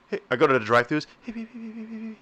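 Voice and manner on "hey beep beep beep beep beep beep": barely audible, very high-pitched mumbling. Retelling a masked drive-thru worker's greeting: imitating someone talking low and soft. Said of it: "talking low and soft as shit".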